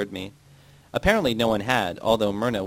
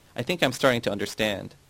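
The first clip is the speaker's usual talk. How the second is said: ordinary delivery, nothing marked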